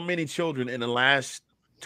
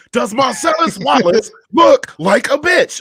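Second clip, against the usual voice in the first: shrill, very loud, drawn-out, deliberate put-on bellow; 10 semitones higher, 11 dB louder than usual. Trying a movie line impression, loud Samuel L. Jackson impression. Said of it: "It sounds like me just being really loud for no damn reason at all".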